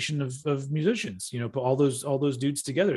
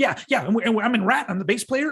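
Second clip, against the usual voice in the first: fast, eager patter, pitched up; 8 semitones higher than usual. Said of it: "he talked very fast".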